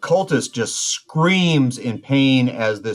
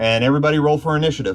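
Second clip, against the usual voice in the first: normal talking voice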